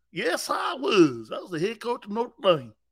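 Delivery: put-on hillbilly Southern accent. As the former Notre Dame head coach, answer about South Bend in a Brian Kelly hillbilly voice. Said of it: "why you sound like a hillbilly?".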